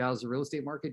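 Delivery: ordinary delivery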